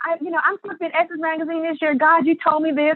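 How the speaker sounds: put-on crying scream. A former festival vendor retells what she screamed to god, retelling screaming and crying. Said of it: "So I'm screaming to God and crying".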